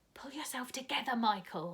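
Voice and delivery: whispered. Reading a girl urging her brother to calm down: whisper. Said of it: "said Jane in a whisper".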